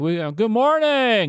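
pitched way up, slow presenter voice. Imitating how Tim Cook opens a live event: Tim Cook impression. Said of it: "like that".

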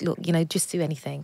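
ordinary talk

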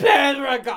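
put-on British accent and pronunciation. Showing how a name has to be said, in a british accent. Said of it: "Is that your British accent?".

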